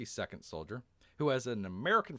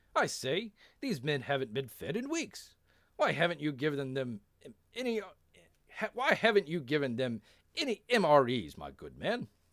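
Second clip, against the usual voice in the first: put-on English accent, played as a captain; 4 semitones higher than usual. Voicing a character's line, the speaker does an English accent. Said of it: "that's a pretty good English accent".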